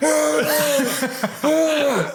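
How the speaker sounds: very high, unhinged, crazed little cries. Retelling a movie scene of a crazy-eyed husband holding a gun: imitating a crazed husband. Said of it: "He's just going".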